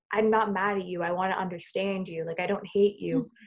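mock tearful voice, breaking with crying. Retelling the words of a crying young man at a protest: imitating a breaking, crying voice. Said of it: "his voice was breaking".

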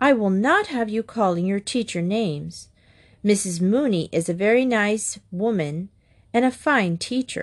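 ordinary delivery

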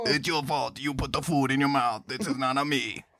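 put-on Italian-sounding Japanese accent. Playing a police officer scolding someone for obesity: italian japanese accent. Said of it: "You sound like an Italian Japanese person".

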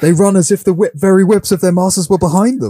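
very high-pitched, bro-y dude-bro voice. Quoting a line from Two Towers, imitating a bro-y voice. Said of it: "he says it in such a bro-y voice".

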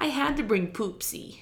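put-on Brooklyn accent, pitched high. Retelling a movie scene, quoting Jill: Jill voice. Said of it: "Brooklyn accent, but, like, high-pitched".

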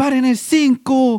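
put-on drunk man shouting. Retelling how a drunk fan in the stadium shouted: imitating a drunk man shouting.

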